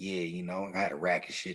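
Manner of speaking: very specific Baltimore way of talking and lingo. Imitating a friend from Baltimore describing being busy: his way of talking. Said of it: "he says things very specifically".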